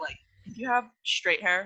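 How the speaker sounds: ordinary delivery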